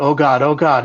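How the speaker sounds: frightened, desperate, panicked, repeated words. Retelling feeling the room get brighter, imitating own terrified words. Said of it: "I'm shaking to death".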